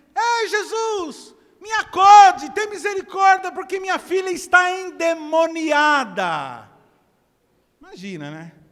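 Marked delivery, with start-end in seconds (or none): 0.2-6.7 crying out, very high, very loud, drawn out. Retelling a woman crying out to Jesus from a crowd, imitating a woman shouting. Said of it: "Ela fala assim".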